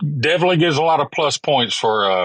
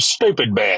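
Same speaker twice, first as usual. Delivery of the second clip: usual speaking voice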